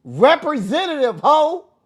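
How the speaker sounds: very high, shrill, loud, exasperated, frustrated yell. Acting out calling an automated phone menu, retelling own screaming. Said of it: "And I be screaming".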